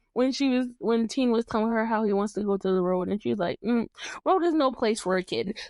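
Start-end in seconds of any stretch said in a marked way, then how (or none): none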